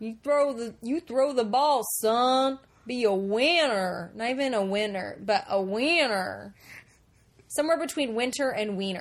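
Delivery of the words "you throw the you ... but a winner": bad put-on Southern accent. Imitating the movie dad with the worst accent: imitating bad Southern accent. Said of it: "like the neighbors from King of the Hill".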